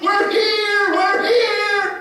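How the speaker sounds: very high, very loud, slow, drawn-out calling out. Retelling people greeting arrivals at an airport: imitating someone yelling. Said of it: "And they're waving and yelling".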